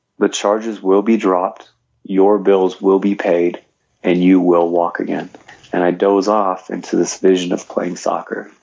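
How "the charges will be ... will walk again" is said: mock clear whisper. Retelling a voice heard in a hospital bed: imitating a clear whisper. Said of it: "this clear whisper that says".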